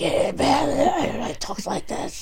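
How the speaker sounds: put-on very slow, soft, raspy old man voice, drawn out.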